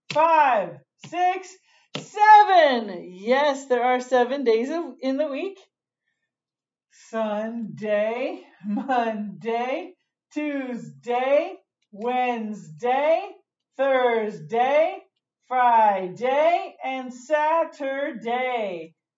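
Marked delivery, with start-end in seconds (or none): 7.1-18.9 deliberate slow reading, every syllable clearly separated. Counting the days of the week aloud, reading slowly. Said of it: "when I read it slow".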